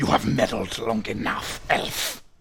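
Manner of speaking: harsh, creaky hissing. A game master voices Gideon casting a spell at the players: Gideon hissing. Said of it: "he hisses".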